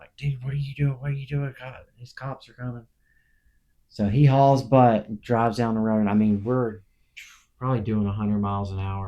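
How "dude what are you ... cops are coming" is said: frantic, urgent yelling. Retelling friends yelling at a speeding driver: imitating friends yelling. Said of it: "all yelling at the driver".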